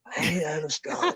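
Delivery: put-on raspy voice, words rasped out rough.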